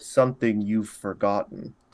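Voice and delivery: low, grumbly, rumbling voice. A large froggy shape speaks up in the scene, low grumbly voice. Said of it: "you just hear a low, grumbly voice".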